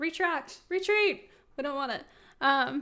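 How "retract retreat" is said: shouting, higher and louder. Undoing a change that doesn't look good, yelling into the microphone. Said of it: "didn't mean to yell into the microphone".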